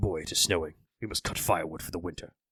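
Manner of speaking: hushed, soft war god voice. A streamer talking about God of War slips into a bit: Kratos impression. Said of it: "I just immediately wanted to start doing the fucking Kratos tricks".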